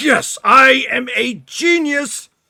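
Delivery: booming, very loud, very high, very slow triumphant cheer. Voicing a character whose device works at last: cheering. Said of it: "and he cheers".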